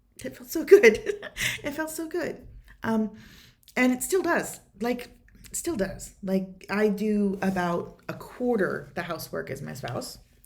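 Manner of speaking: moved, choked-up voice, catching with feeling. Sharing a personal story about their spouse, choked up. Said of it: "Sorry, I get choked up about this".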